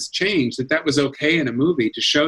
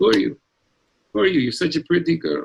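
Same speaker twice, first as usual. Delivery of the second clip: spot-on, put-on Eastern European Yiddish-inflected accent; 2 semitones higher than usual. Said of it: "I talk like this".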